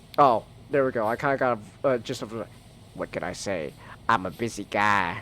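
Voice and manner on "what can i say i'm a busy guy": very low, deep, soft, slow voice. Trying out a character voice, the speaker lands on a Cleveland voice. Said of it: "that just sounds like Cleveland".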